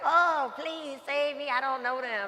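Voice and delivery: high, loud, drawn-out, begging plea. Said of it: "start begging for my life".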